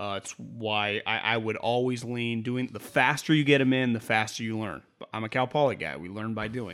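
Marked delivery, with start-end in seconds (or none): 6.0-6.8 quiet sarcastic tone. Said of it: "I say that, like, sarcastically".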